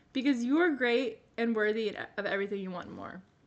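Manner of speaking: emotional, tearful, on the verge of crying. Reading an encouraging passage aloud and getting emotional, tearing up. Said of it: "I'm about tearing up".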